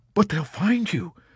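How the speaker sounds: desperately arguing tone. Narrator reads a major replying to a man set on escaping: arguing desperately. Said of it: "Major Danby argued desperately".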